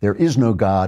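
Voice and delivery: ordinary talk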